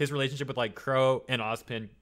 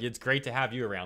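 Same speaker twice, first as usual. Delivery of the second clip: put-on sarcastic tone. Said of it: "totally sarcastic".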